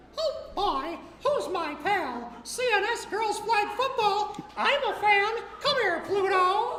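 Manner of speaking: high, loud, squeaky voice. Asking the audience to close their eyes to prove it's him, Mickey Mouse impression. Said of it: "my impression of Mickey Mouse".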